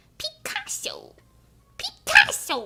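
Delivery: very high video-game character voice. Calling out a name, then asking if others liked it: Toad from Mario voice. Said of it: "You guys like my Toad impression?".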